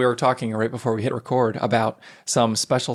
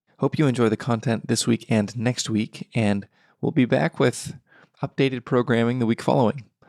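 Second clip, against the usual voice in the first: hushed, soft voice. A podcast host signing off to listeners, in hushed tones. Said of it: "I'm speaking in hushed tones this morning".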